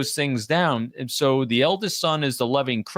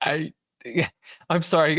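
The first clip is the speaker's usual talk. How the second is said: very slow words spoken through laughter; 3 semitones higher than usual. Apologizing to the other speaker for interrupting: laughing while talking. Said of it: "I just keep laughing".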